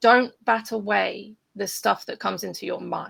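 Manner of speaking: ordinary talk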